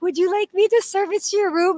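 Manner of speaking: very high-pitched, eager, excited voice. Retelling the housekeeper's offer to service her room: imitating an excited offer. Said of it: "excited about servicing my room".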